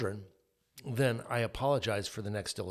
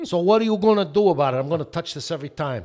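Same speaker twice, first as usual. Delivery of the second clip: put-on New York Bronx accent, loud; 7 semitones higher, 11 dB louder than usual. Speaker voices what his firstborn child's look seemed to say, put-on Bronx accent. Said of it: "like a Bronx accent".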